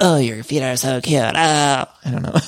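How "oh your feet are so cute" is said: weird, creepy-sounding voice. Acting out how Heather complimented someone's feet: creepy Heather Dubrow imitation. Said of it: "Heather did say it in a weird kind of creepy way".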